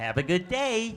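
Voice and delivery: fake, very bad, sunny, upbeat American accent. Contrasting American and English ways of speaking, doing a very bad American accent. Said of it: "That's my very bad American accent".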